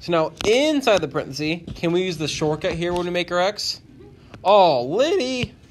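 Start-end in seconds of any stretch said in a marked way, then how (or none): 4.4-5.5 voice breaking and cracking on the words. Working through a math problem aloud and calling on liddy, voice cracking. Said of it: "my voice cracked there".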